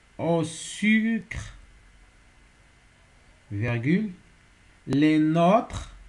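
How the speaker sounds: slow, deliberate, word-by-word dictation.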